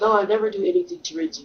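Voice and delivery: acted-out indignant, affronted, offended tone. Retelling the roommate's reply to a joke: imitating someone offended. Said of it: "really offended".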